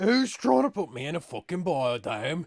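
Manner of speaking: put-on stock Australian accent. Riffing on the Hemsworth brothers, the speaker does a stereotypical Australian accent. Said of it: "going for like a stereotypical Australian accent".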